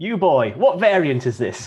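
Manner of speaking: loud, high-pitched shout. Describing a meme picture and quoting its caption: Scrooge shouting.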